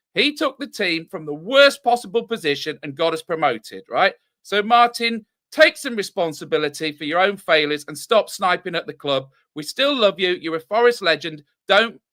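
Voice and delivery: ordinary delivery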